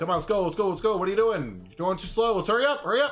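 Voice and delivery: rapid Midwest speech. Showing how Chicagoans talk when rushing someone along, fast Chicago talk. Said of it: "we don't have time to talk slow".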